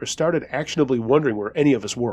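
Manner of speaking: ordinary delivery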